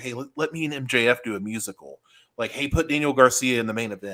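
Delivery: put-on whisper. Speaker acting out someone whispering in another person's ear, mock whisper. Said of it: "He's like whispering to Tony Khan's ear".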